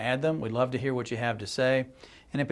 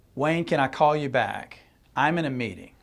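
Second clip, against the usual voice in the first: put-on mildly fed-up, slightly exasperated brush-off tone. Retelling a phone call from a person in a meeting: imitating a slightly exasperated tone. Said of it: "a little bit of an exasperated tone".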